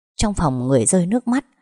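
ordinary talk

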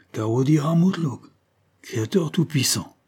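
heavy, thick-voiced cry. A man forgets his polished french and russian, crying out thick-voiced. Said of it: "s'écria-t-il d'une voix épaisse".

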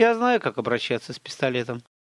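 ordinary delivery, nothing marked

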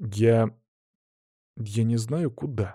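faltering, very slow, hesitant delivery. A young man looks around, then answers his companion, hesitant. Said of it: "чуть замялся".

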